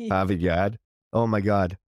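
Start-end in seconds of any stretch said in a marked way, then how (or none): 0.1-0.8 put-on Boston accent. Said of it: "a different fucking accent".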